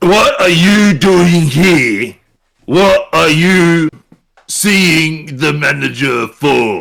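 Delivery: hobgoblin guard character voice. A hobgoblin guard at the manager's residence questions a visitor: hobgoblin guard voice. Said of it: "Hobgoblin goes".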